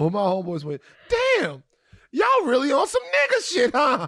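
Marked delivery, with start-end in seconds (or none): 1.1-4.1 pissed-off, furious, very high-pitched loud shout. Retelling a homeboy's outburst at a restaurant, imitating a loud, pissed-off outburst. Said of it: "he said it so loud, and he was so pissed off".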